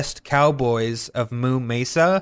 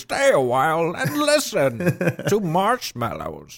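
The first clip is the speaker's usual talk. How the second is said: put-on swooping, swinging old-man storyteller voice; 4 semitones higher than usual. Speaker riffs on another's old man voice: Deckard Cain impression. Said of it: "channeling my Deckard Cain".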